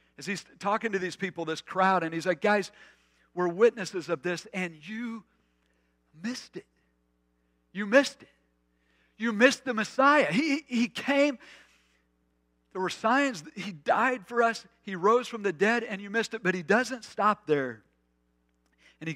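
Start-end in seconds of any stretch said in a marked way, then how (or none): 2.4-16.4 fervent, impassioned, passionate voice, pitched up. Speaker retells Peter addressing a crowd, acting out Peter's passionate plea. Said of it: "can you feel the passion in his voice?".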